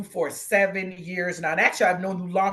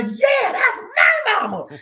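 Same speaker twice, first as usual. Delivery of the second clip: high, proud, shouted cheer. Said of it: "My daughter was cracking me up".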